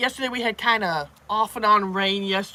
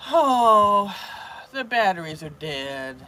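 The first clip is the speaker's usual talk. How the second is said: very slow whine with a drawn-out oh. Retelling what husband said when the remote died: imitating husband's whining. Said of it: "doing the whining".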